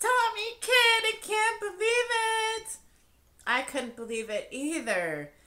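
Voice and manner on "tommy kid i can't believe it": very high, shrill, loud shriek, last word stretched. A girl recognizing Tommy screams really loud. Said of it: "someone else screamed, like really loud".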